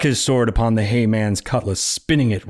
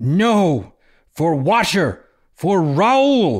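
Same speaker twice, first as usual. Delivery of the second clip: very slow, high, drawn-out battle cry; 8 semitones higher than usual. Narrator reading a fire woman's cry as she leaps at a creature: shouting. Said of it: "The fire rose and danced its way into the form of a woman. / The fire rose and danced its way into the form of a woman. ... She leapt forward, / she shouted".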